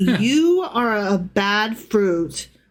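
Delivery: mock venomous, scolding tone. Acting out what to tell rude people someday: pretend venomous telling-off. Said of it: "you could say it with such venom".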